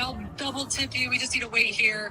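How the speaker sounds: plain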